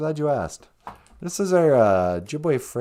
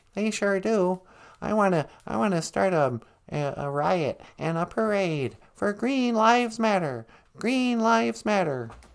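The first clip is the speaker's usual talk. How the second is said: high, pitched-up cartoon frog puppet voice; 5 semitones higher than usual. Greeting the show as a caller: Kermit the Frog voice. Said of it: "Kermit the Frog, welcome to the show".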